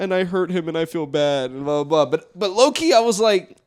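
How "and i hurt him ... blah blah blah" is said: put-on crying, mimicking tearful speech. Retelling what she said after hanging up the phone, imitating someone crying. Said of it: "she starts crying and she's like".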